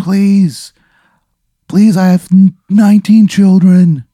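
pleading, desperate tone. Voicing the man making one last plea: desperate last plea. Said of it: "one last plea".

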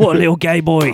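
put-on British manner. Imitating how Brits would react to a vegan sausage roll: imitating a Brit reacting. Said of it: "So many Brits would have been like".

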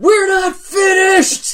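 shrill shout, pitched way up and loud. In the game scene, Kendra yells out after someone leaving: yelling. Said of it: "Kendra just yells out".

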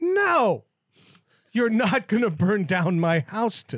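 urgent, emphatic, frantic acted-out screaming. Retelling a fight with a dryer-vent fire: imitating his own screaming. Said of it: "me screaming".

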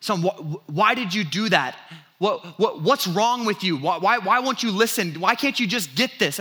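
put-on harsh scolding tone. Retelling how he scolded his crying son: retelling scolding his son. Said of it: "laying into him".

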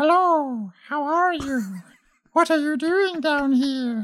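very high, slow, floating creature voice. Asked how a flump sounds telepathically, trying it without practice; flump voice. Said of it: "How would they sound telepathically".

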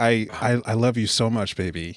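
put-on, mock-tender, soft sweet voice. Retelling what a man said on the phone, imitating his soft voice. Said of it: "He sounded really nice".

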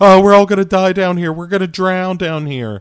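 high, panicky, mock scared lament. Mocking the movie's characters swimming through tunnels: imitating scared movie characters. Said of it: "these girls swimming through tunnels and being like".

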